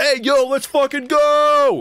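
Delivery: mock yelling. Mocking people who use a phrase the speaker hates, do a mock yell. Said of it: "stop yelling".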